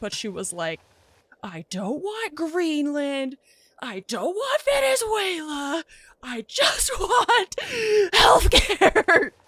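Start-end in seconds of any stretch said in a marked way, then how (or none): 1.4-9.3 play-acted, very high, slow, rising, toned-down exasperated yell. Retelling a girl's rant from her car: imitating a girl yelling, toned down. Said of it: "so I'm not gonna yell as loud as she was".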